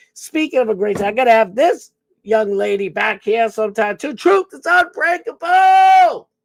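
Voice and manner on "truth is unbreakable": very high, loud, all-out scream. Calling out a name on the show: screaming. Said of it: "I like screaming it. I'm sorry. I just like yelling".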